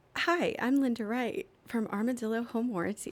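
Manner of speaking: voice like an automated recorded phone message. Asked to sound like a recording, a speaker says the greeting; like a recorded message. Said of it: "now do it where you sound like it's a recording".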